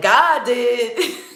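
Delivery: signature catchphrase voice, hit hard. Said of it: "I love how [name] be like".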